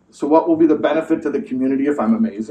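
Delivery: dry, very flat, level deadpan delivery. Retelling how the Rebbe answered praise: imitating a very flat reply. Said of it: "very, very flatly".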